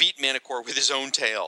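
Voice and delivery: ordinary talk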